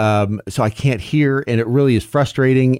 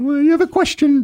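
put-on British royal voice, pitched higher. Answering being addressed as Your Majesty: Queen of England voice. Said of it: "I can speak like the Queen of England".

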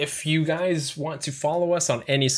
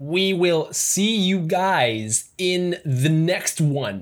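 cartoon cat voice, drawn-out "guys"; 4 semitones higher than usual. Asked to read this line, doing it in Vector Cat's voice. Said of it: "read this in Vector Cat's voice".

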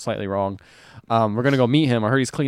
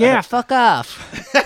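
put-on, very high-pitched, loud American accent; 12 semitones higher, 5 dB louder than usual. Retelling a woman's reply during a band story, in a put-on american accent. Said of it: "It's my American accent".

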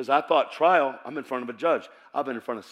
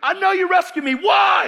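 very high, very loud, desperate shrieking scream; 8 dB louder than usual. Retelling a past prayer, demanding an answer: retelling screaming in prayer. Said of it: "And I'm screaming in the prayer room".

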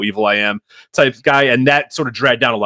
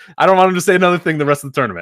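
ordinary talk

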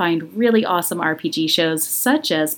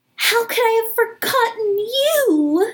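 very high, delighted, joyful squeal, stretched out. Playing a character reuniting with a lost friend: shouting in delight. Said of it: "and I shout".

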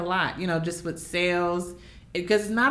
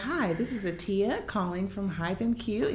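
formal salesy voice, quieter; 4 dB quieter than usual. Recreating own old work voicemails, in a very formal salesy voice. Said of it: "I was really, really formal".

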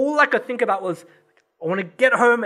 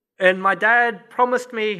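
normal talking voice

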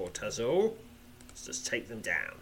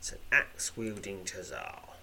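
ordinary talk, nothing marked

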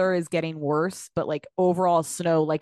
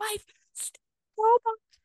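put-on very high, angry, pissed-off little kid voice. Retelling waking a kid up, imitating Sterling pissed off. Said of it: "he was all fucking pissed".

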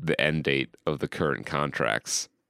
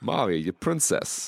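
put-on halting actor voice, pitched higher; 4 semitones higher than usual. Imagining an actor cast as Toad, speaking his line: Christopher Walken as Toad. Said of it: "Christopher Walken as Toad".

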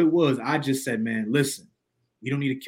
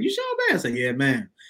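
put-on Southern North Carolina accent. Retelling what mom asked at the store: imitating mom's north carolina accent. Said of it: "She from Zebulon, North Carolina. That's how she sounds".

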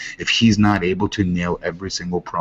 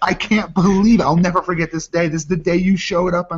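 put-on scream, higher; 12 semitones higher, 3 dB louder than usual. Acting out an excited wrestling fan at ringside: imitating a screaming fan. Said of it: "would you be screaming there".

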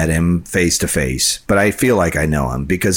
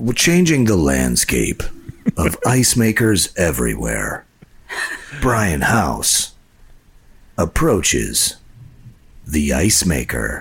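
swooping, dramatic, epic movie-trailer narrator voice. After being told they sounded like a movie, a movie-trailer voice. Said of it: "I could do that voice".

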